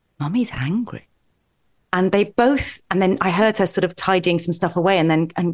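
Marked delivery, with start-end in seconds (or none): 0.2-1.1 very quiet, hushed, murmured delivery. Retelling her younger child telling his sister, very quietly. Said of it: "say very quietly".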